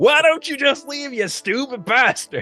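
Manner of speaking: screaming, yelling. Voicing an injured man who screams at the player: screaming. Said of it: "he's screaming this at you".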